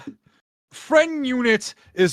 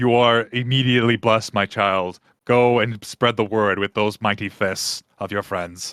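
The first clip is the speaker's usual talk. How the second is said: grand, resounding, booming deity voice; 7 semitones lower than usual. Voicing a god speaking into a character's head: voice of the sun god. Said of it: "you just hear a voice in your head go".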